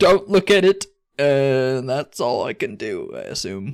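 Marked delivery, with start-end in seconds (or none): 0.0-0.9 very loud, high-pitched shouted yell. In a tabletop game, a player's hardening character calls out, yelling out a warning. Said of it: "I'm going to yell out".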